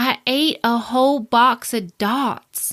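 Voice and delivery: put-on Southern accent, very slow drawl. Retelling a patient's phone call about her high blood sugar: imitating a Southern accent. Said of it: "she has a Southern accent".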